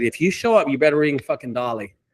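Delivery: ordinary delivery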